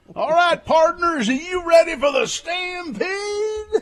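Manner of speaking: booming, very high, loud, drawn-out arena announcer call. Playing a ring announcer for a dinner show: ring announcer voice. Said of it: "I could see you as being like the ring announcer".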